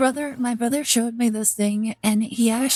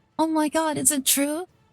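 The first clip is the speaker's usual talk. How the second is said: imitated excited, eager voice, higher; 6 semitones higher than usual. Retelling how a character reacted to an offer: imitating an excited character. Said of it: "completely like".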